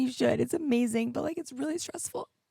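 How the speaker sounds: tearful, crying through the words. Podcast host speaking to listeners on their own episode, crying while speaking. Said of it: "I don't know why I'm crying".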